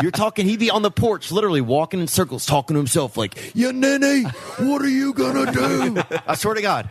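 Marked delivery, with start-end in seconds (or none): 3.5-6.0 pitched-way-up, blustering pro wrestler promo voice. Retelling how he paced the porch at night talking to himself, like a wrestler. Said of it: "talk like a wrestler".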